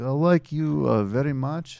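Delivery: high-pitched mock Russian accent.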